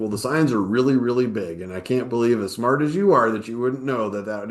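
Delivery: put-on snarky, teasing tone. Retelling how the son kept picking at him: imitating snarky teasing. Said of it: "he just kept picking at me".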